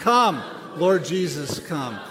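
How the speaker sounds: loud, slow, full-gusto calling voice.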